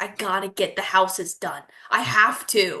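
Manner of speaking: ordinary talk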